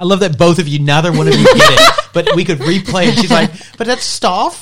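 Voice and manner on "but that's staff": put-on posh English accent, higher pitch. Replaying to the others how she says it: imitating her posh accent. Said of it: "She's like, ... Because it's your accent".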